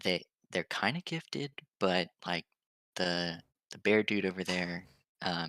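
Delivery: muttered under the breath. Role-play player's character, forehead against another, so Station can't hear, muttered under the breath. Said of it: "I'm saying this under my breath".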